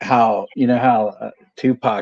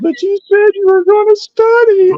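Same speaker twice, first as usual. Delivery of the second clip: put-on shrill, very high, loud, near-tearful panic; 7 dB louder than usual. Retelling how she freaked out at Mike, imitating someone near tears. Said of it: "she's freaking out and almost in tears".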